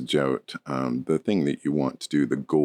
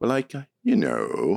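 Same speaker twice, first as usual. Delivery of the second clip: put-on creaky vocal fry, pitch dropping at sentence ends; 8 semitones higher than usual. Imitating a coffee shop lady from a show: imitating a vocal fry. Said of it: "it's that dropping low tone at the end with this, with this, this vocal, f-, it's called a vocal fry".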